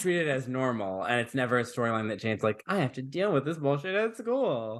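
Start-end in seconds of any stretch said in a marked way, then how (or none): 2.7-4.8 put-on, high, whiny complaining voice. Discussing a storyline, voicing Jane's imagined complaint about school: mock-whiny Jane voice. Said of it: "I'm giving her a whiny voice".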